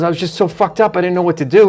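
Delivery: ordinary delivery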